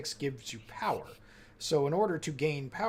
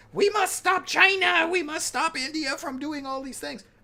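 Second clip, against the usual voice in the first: very high, shrill, full-volume screaming; 14 semitones higher, 7 dB louder than usual. Arguing about climate activists, a speaker mimics Greta Thunberg screaming. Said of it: "screaming at the top of her lungs".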